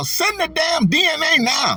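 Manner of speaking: very high, swooping, drawn-out put-on Southern drawl. Imagine what a fiery woman you never met would say, imitating a woman's southern accent. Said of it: "I could hear her now".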